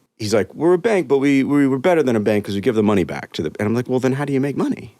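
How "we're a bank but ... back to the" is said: clumsy, bad, put-on Ukrainian accent. Retelling what a guy said in a wild interview, in a bad ukrainian accent. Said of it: "It's gonna be bad".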